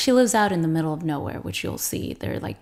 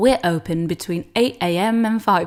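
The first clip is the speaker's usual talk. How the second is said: loud, clumsy, bad put-on British accent; 5 dB louder than usual. Trying out reading a practice text aloud, in an attempted British accent. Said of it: "I can't even do it in British".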